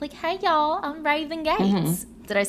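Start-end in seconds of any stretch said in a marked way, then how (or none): 0.1-1.6 put-on very high, cute voice with Southern accent. Talking about a woman's voice, the speaker imitates her, cute Southern Raven Gates voice. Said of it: "her voice is like the cutest little Southern voice".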